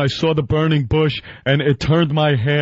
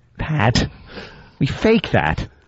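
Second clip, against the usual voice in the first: ordinary delivery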